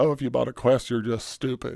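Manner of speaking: ordinary talk, nothing marked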